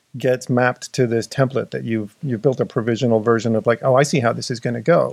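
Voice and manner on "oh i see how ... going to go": normal talking voice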